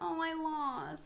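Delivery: put-on mimicked soft childlike tone. Retelling what a bowling date said after losing: imitating a soft, toddler-like voice. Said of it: "he was very, like, soft".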